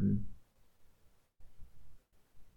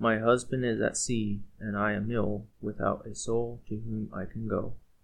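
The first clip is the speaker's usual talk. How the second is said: ordinary delivery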